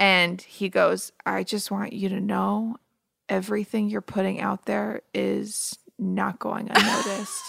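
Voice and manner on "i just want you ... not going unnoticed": soft, hushed half-whisper throughout. Retelling a somber study date on the show: imitating Matt half-whispering. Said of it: "they're just sitting there whisper talking".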